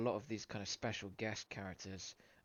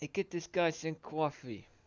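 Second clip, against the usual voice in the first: put-on loud, high New Jersey accent; 7 semitones higher, 7 dB louder than usual. Joking with another speaker, calling for coffee for a guy in a New Jersey accent. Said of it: "That's New Jersey".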